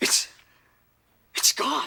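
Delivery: very high, creaky, rough, breathless, panting. Kevin finds his stuff has been thrown out, breathing heavily. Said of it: "(Kevin heavily breathing)".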